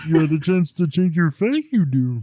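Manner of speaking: high, small, wise-sounding alien voice. Trying the same line in different voices, the speaker switches to a Yoda voice. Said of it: "now we're going Yoda?".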